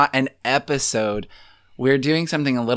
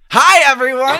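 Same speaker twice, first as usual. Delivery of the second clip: very high, loud, peppy cheerleader delivery; 12 semitones higher, 7 dB louder than usual. Restarting an intro more upbeat after the other speaker's advice, sounding like a cheerleader. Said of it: "now you just sound like a cheerleader".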